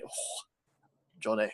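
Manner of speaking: whispered, hushed Scottish accent. Speaker shows how to say Johnny, Scottish accent. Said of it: "try saying Johnny in a, in a Scottish accent".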